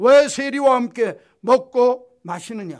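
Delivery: loud, slow, jeering, mocking, accusing delivery.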